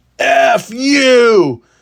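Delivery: mock very high, shrill, drawn-out scream, you held long. Retelling how an upset student screamed at the speaker: imitating a student screaming. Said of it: "scowled and screamed".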